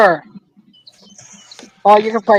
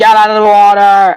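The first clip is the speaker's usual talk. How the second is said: ordinary delivery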